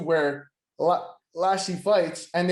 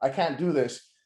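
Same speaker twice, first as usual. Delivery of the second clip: mock sobbing, tearful crying; 4 semitones lower than usual. Retelling a wrestler quitting and walking out, imitating someone crying.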